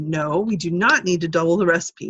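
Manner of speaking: stern, firm, no-nonsense voice of authority. Telling others they need not double the recipe, put-on voice of authority. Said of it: "you're the voice of authority. ... Hear that voice of authority?".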